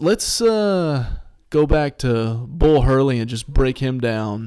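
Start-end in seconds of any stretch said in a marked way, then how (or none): none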